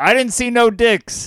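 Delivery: play-acted, high, blurted, hollered yell. Retelling what someone yelled after opening the bathroom door: imitating someone yelling. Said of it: "he yells".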